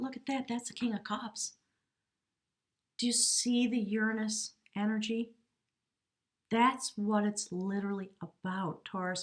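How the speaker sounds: choked-up voice, choked with emotion. Tarot reader speaking to taurus viewers, getting choked up. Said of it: "I'm getting all choked up".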